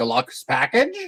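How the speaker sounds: puzzled, doubting, quizzical tone. Questioning a character about the deluxe package in character: quizzical tone. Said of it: "a quizzical tone".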